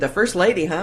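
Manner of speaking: usual speaking voice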